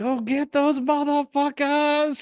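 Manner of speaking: high, slow scream at the top of her lungs.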